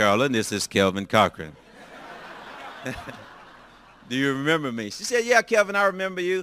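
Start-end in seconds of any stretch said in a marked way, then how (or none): 0.0-4.9 put-on sexy, seductive voice. Calling Carolyn and introducing himself after years, retelling a put-on sexy voice. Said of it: "I put on my best sexy voice".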